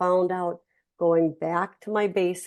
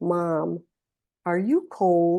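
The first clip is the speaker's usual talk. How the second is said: lowered voice, much slower pace. Explaining how they talk with their mother, the speaker demonstrates: lowered, slower voice. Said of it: "I'm kind of lowering my voice and making it a little bit slower".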